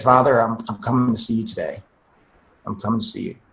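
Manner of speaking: soft, hushed, barely-voiced half-whisper. Retelling a prayer while lying shot on the floor: retelling a half-whisper. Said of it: "I just whispered to the Lord".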